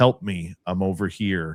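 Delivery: very monotone, completely flat, dead level delivery. Retelling a woman's voice heard calling from the forest, very monotone. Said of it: "saying very monotone".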